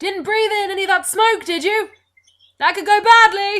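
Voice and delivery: put-on young man's voice calling out, very loud and high. Voicing a young man calling down from above: young male voice calling out. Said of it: "you hear a young male voice call out".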